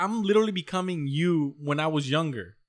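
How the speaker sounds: plain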